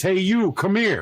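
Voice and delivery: put-on New Jersey accent. Retelling how the call center boss called him over, the speaker imitates Joe Wagner's New Jersey voice. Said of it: "in his most New Jersey voice".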